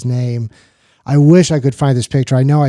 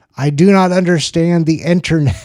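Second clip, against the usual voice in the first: put-on very loud, blurted-out stage delivery; 4 semitones higher than usual. Retelling a performer on stage saying a line: imitating someone saying it very loudly. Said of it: "Just kind of very loudly".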